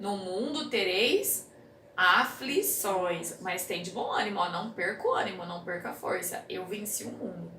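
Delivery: ordinary delivery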